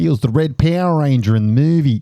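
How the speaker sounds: put-on Australian accent done American-style. Chatting with friends about an actor, in a put-on Australian accent. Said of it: "I'm putting on an Australian accent".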